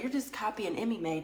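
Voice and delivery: ordinary delivery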